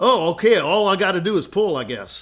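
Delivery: put-on rural Texas country accent. Telling a joke about a country bumpkin after a lesson, Texas country accent. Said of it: "he had a country accent, you know, Texas".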